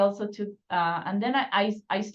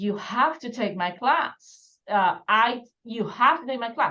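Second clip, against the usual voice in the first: put-on, pushy, insistent screaming cry; 2 semitones higher than usual. Retelling how a professor urged joining his class: imitating someone screaming. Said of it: "this professor starts screaming".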